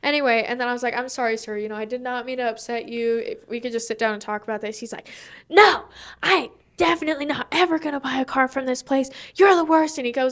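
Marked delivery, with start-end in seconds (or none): 5.5-10.0 mock-angry screaming and shouting. Retelling a work incident, the speaker imitates a screaming angry customer. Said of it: "he starts screaming at them".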